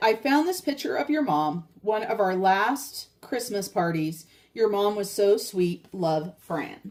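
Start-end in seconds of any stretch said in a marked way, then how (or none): none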